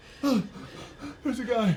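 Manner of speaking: out of breath. Spotting a guy during the game, panting.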